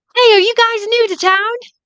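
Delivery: eager, very high, fast, excited voice. Voicing a costumed townsperson greeting newcomers: excited greeting. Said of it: "he waves excitedly, uh, and says".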